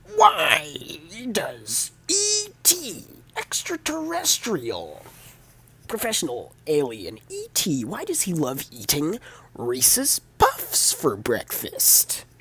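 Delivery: deliberate, awkward comic delivery, high, swooping, drawn-out. Retelling the full joke Neil tells, doing an impression of Neil. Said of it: "I have to do the impression now".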